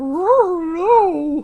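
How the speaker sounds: very high, weird, cartoonish dog voice. Retelling how a character answered in a weird voice: Scooby-Doo voice. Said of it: "this weird fucking Scooby-Doo voice".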